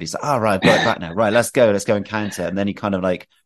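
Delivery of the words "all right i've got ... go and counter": getting a little excited, eager, keen. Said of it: "a little excited".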